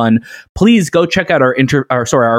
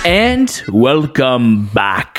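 eerie, spooky put-on voice. The speaker welcomes everyone back, doing it for Shay: spooky voice. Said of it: "That was my spooky voice for you".

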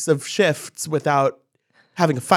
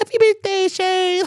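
very high, squeaky cartoon-character voice. Recounting someone's gushing birthday message, quoting her: Scheana cartoon-character voice. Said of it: "Sheena is in full like cartoon character voice".

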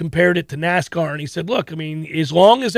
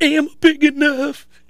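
put-on high little Southern kid voice; 8 semitones higher than usual. A parent recalling a clip of their young son, doing his little redneck voice. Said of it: "His little redneck voice".

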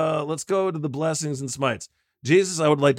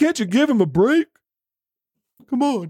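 politician voice, pitch raised, lightly pleading; 9 semitones higher, 4 dB louder than usual. Imitating a politician defending another: George Santos impression. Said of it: "That's my George Santos impersonation".

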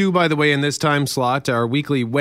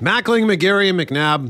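talking through a mouthful, higher pitch; 5 semitones higher than usual. Speaker chats with others while finishing a mouthful of peanuts, talking with mouth full. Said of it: "trying to finish a mouthful of peanuts".

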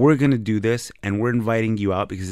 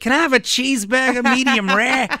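put-on New York accent pitched very high; 4 dB louder than usual. Retelling a friend ordering food in a restaurant: imitating a New York accent. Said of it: "this New York accent".

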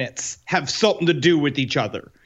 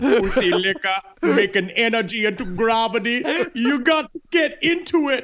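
put-on Jamaican-accented voice; 4 semitones higher than usual. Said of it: "a Jamaican Einstein sounds amazingly fun".

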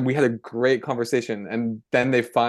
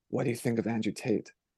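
soft, secretive half-whisper on the side; 9 dB quieter than usual. Retelling how a teenage boy asked a question: imitating a half-whisper. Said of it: "one of them kind of whispers to me".

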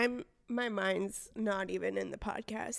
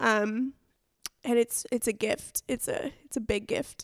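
tearful speech, crying while talking; 2 semitones higher than usual. In a recorded one-on-one conversation, speaking to the other person, crying while talking. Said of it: "I have to stop crying because we're recording".

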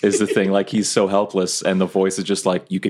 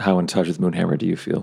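quiet, hushed voice. A player's character walks to the corner to question a hidden character, hushed tone. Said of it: "speak to you in a hushed tone".

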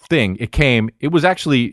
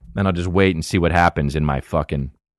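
normal talking voice

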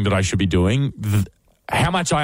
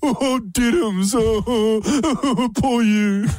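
shrill, very high, dragged-out fake sobbing; 11 semitones higher than usual. Mocking someone who is yelling at you, in a mock crying voice. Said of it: "I do like the crying".

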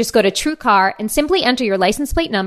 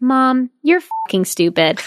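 play-acted sweet, gentle, innocent little-kid voice; 2 semitones higher than usual. A mother retells what her three-year-old daughter said, imitating the sweetest voice. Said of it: "says in the sweetest, non-threatening voice".

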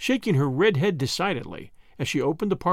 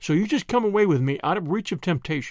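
plain

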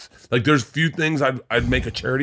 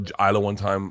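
normal talking voice

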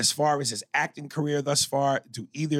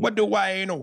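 put-on Jamaican accent, pitched up; 6 semitones higher, 3 dB louder than usual. Redoing a joke's punchline to see if it lands better: put-on Jamaican accent. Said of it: "if I did it in a Jamaican accent".

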